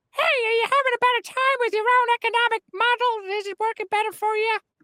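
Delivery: very high, squeaky puppet voice. Doing a comic bit, in an Elmo voice. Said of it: "he's trying to do an Elmo voice".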